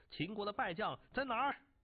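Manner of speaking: furious, loud, high-pitched, demanding tone. A man, hearing the ruler freed the defeated Qin generals, angrily demanding. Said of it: "怒气冲冲地问道".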